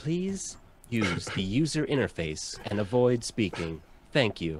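automated shop announcement robot voice. Voicing an automated shopkeeper that customers enter: automated shopkeeper voice. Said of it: "You've entered the automated shopkeep".

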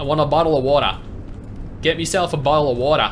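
fake Australian accent. Trying an Australian accent after being told it sounded British, attempted Australian accent. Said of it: "So we say it in Australian".

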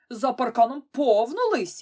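loud yelling. Narrator reads Findus answering Petson: yelling. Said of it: "зарепетував Фіндус".

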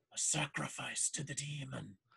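frightened, secretive, fearful, hushed half-whisper. Voicing a frightened sailor confiding a secret: fearful half-whisper. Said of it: "sort of fearfully whispers".

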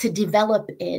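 plain

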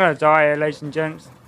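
ordinary talk, nothing marked

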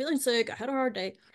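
plain

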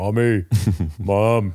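put-on really deep, low-pitched kid voice. Retelling a kid at a pool calling his mom: imitating a kid's really deep voice. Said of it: "he had a really deep voice".

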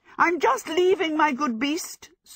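flustered, frantic cry, very high pitched. Sophie, hopping round in a field, calls out to a bull, a frantic cry. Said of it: "Sophie cried, hopping herself round frantically".

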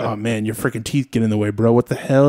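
ordinary talk

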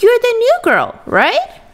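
very high, bright, friendly, cheerful voice. A boy speaks to a new girl at a door, cheerful question. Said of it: "he asked cheerfully".

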